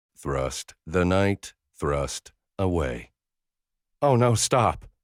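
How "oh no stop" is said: breathless, high-pitched pleading. Reading a scene where a woman laughing begs him to stop: begging breathlessly. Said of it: "Macy begs breathlessly".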